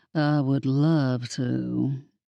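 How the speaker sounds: very slow, low, flat, bored drawl. Narrator reads the ghost cat accepting an invitation to a stakeout: Peaches' oh-so-bored voice. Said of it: "said in his oh-so-bored voice".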